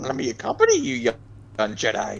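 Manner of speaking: very slow, drawn-out, odd voice swooping up and down. Joking about a swampy place: Yoda voice. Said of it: "that's the voice I should do for Lilith. I should do Yoda".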